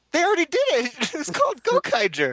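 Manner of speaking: fake squeaky voice crack. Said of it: "And then your voice squeaks".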